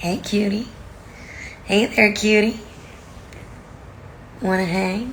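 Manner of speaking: breathy, whispery, flirtatious murmur. Playing with a voice changed by being sick, for viewers: flirty voice. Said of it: "It's very flirty".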